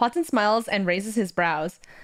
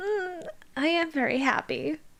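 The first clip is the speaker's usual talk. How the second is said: small timid voice, pitched up, very slow; 8 semitones higher, 4 dB quieter than usual. Reading a character's shy reply after being reassured: small voice. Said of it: "says in a small voice".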